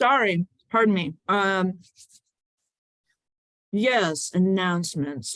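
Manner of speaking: slow talking through a mouthful of food. In a Zoom meeting, caught mid-bite when called on, speaking with mouth full. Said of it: "You caught me with my mouth full".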